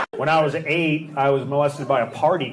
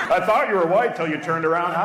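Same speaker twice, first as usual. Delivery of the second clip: ordinary delivery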